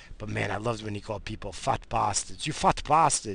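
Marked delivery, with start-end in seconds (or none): 2.5-3.3 put-on broken Portuguese accent, pitched up. Imitating a Portuguese grandfather insulting people, broken Portuguese accent. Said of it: "He had that broken accent".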